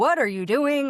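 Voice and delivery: demanding shout. Retelling being woken in the middle of the night: imitating someone yelling. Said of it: "he's yelling at me going".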